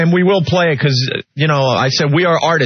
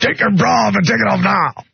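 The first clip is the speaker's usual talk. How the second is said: put-on yelling voice, higher pitch; 4 semitones higher than usual. Repeating a line done as an impression of Vince: Vince impression yelling. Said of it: "that was a Vince impression".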